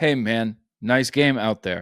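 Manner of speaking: stiff, wooden video game character voice. Imitating a player doing stiff voice acting in an old 2K game: Kevin Durant's 2K voice acting. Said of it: "Kevin Durant would be like".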